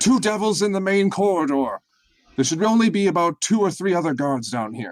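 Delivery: high, loud yelled call-out. Mid-fight, Mysterious Spy yells out to the rest of the party. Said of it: "Now it is Mysterious Spy's turn. / He yells out to the rest of you".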